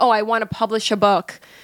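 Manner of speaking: ordinary delivery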